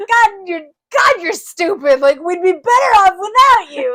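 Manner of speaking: very loud, furious, berating shout. Retelling how Gandalf treats Pippin in the movie: imitating Gandalf yelling. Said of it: "Gandalf's always yelling at him".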